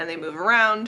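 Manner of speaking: ordinary talk, nothing marked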